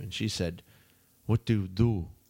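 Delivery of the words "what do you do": put-on Russian accent. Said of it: "she had, like, a Russian accent".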